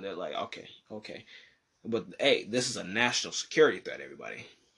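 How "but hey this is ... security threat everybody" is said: low, quiet, tongue-in-cheek facetious tone. Address everybody about something you think is overhyped, facetious. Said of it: "I'm being facetious when I say national security threat".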